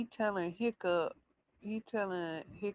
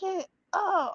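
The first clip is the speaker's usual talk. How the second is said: very high, screaming, cheering scream; 11 semitones higher, 3 dB louder than usual. Retelling cheering on a character who fell while watching, screaming. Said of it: "I'm up here just screaming".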